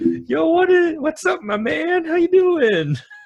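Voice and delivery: very high-pitched, very slow, drawn-out friendly tone. Imagining an official greeting merchants like a skit: imitating a casual buddy greeting. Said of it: "imagining Durham doing that".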